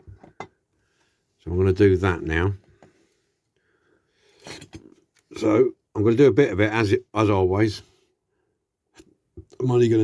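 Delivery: hiccupping while talking. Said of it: "I've got hiccups".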